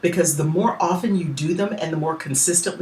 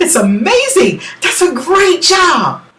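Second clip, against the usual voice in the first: very high, thrilled, bubbling with excitement; 12 semitones higher, 10 dB louder than usual. Demonstrating how to voice different emotions, sounding really excited. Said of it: "You can also sound really excited".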